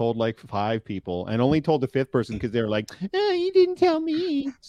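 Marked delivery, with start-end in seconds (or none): 3.1-4.5 squeaky, very high, slow, lingering delivery. Speaker recounts telling five people a secret: Tanith impression. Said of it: "that's my tanith impression".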